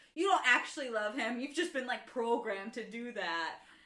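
normal talking voice

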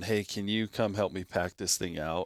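ordinary talk

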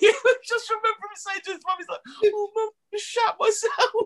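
speaking through laughter.

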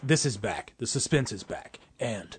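classic dramatic movie-trailer announcer voiceover. Retelling a movie trailer that scared them: movie trailer voiceover voice. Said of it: "the classic trailer voiceover guy".

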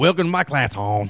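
badly done, thick Baltimore accent. Quoting a boy's teacher greeting the class, in a bad Baltimore accent. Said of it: "You can't even do a Baltimore accent".

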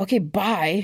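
angry, abrupt, curt, livid delivery. Retelling own reply before slamming the phone down, retelling own livid reply. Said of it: "And I was livid".

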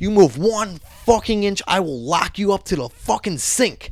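mock menacing, aggressive voice. Retelling how a man threatened a prisoner: imitating an aggressive threat. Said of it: "he's being very aggressive".

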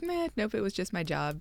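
soft, offhand, nonchalant shrug-off.

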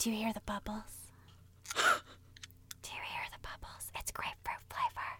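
hushed, breathy, mock asmr-style whisper. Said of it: "This is how I would do A S M R".

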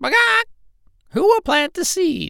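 very high, loud, carrying call. Narrator reads the story; the hen calls to the pig, cat and rat: Little Red Hen calling loudly. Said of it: "A little red hen lived in a barnyard. / said the little red hen, / delicious worms and felt they were absolutely necessary to the health of her children. / "Begaw!".

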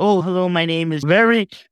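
imitated timid voice. Retelling walking up to a district leader's desk among 300 people; retelling her timid greeting. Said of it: "in a little bit, like, timid".

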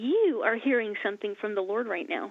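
plain

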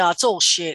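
ordinary talk

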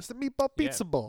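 Italian-American accent. Naming a restaurant's new dish the way it must be ordered: mock Italian-American accent. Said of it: "I like how you say it".

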